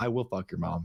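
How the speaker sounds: cool, unbothered, composed, calm, even delivery. Showing how to answer an insult mid-game, said calm. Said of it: "say it calm".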